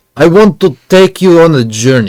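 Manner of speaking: put-on Russian accent. Describing a performer at Summer Circle and quoting him, imitating a Russian accent. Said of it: "he sounds Russian".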